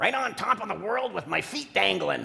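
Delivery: rough-edged, creaky church pastor voice. Tell how the pastor at your church always answers when asked how he is, imitating his voice. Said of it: "I'll try to use his voice".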